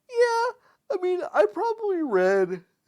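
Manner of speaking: words spoken through a very loud, high yawn. Chatting about childhood books with another speaker, talking through a yawn. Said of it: "Sorry, I'm yawning".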